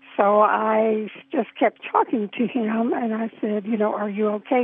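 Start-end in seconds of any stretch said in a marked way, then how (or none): none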